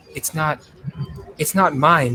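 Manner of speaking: halting voice, words fading away unfinished. Voicing a wounded character looking at blood: voice trailing off. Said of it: "but her voice trails off".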